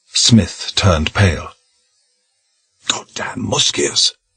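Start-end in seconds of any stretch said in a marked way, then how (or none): 2.9-4.1 fierce, venomous whisper under the breath. A man, learning who the people are, reacts in a vicious whisper. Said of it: "he said in a vicious whisper".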